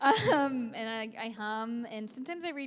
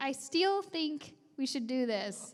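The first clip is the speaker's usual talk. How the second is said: heavy, thick Tennessee accent; 3 semitones higher than usual. Explaining trouble with certain words, the speaker demonstrates her speech: thick tennessee accent. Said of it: "we say things with really thick accents".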